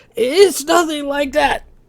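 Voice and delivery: breathless wheezing gasp, voice very high. Narrator voicing a man who has just said he's dying, wheezing for breath. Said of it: "He wheezed for breath".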